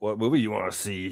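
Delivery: put-on movie announcer voice. Recalling calling the movie line: Movie Phone guy voice. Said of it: "the Movie Phone guy would be like".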